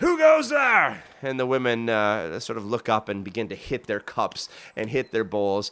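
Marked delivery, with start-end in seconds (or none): 0.0-1.0 shrill, booming, very loud high yell. Voicing a gate guard calling down to arriving women: yelling down from the gate. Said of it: "the people on the gate yell down".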